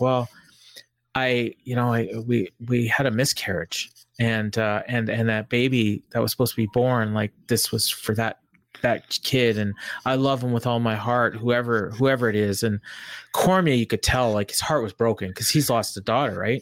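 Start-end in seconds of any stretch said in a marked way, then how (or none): none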